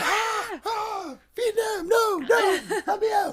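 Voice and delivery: very high, very loud, very slow terrified screaming. Joking about waking up at night: mock screaming in sleep. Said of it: "I just wake up screaming like".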